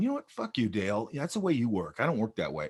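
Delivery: plain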